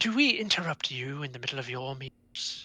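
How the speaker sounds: surprisingly polished, refined, well-bred cultured voice. A vulture stops and speaks up to the group, in a surprisingly cultured voice. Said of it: "in a surprisingly cultured voice".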